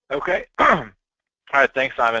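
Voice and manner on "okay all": cracked, breaking voice, cracking mid-phrase. Joining the line after a while without talking, thanking the presenter: voice cracking. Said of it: "my voice cracked there for a second".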